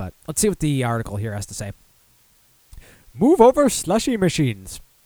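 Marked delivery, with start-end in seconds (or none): 3.1-4.8 very high, loud, put-on sing-song voice, swooping. Reading an article headline aloud, done in an Apu voice. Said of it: "I had to do an Apu voice there".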